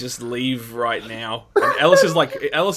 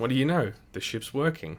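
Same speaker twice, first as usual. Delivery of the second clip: low, soft mutter under the breath; 6 dB quieter than usual. Voicing a character remarking that the ship works: muttering under his breath. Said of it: "Ellis under his breath goes".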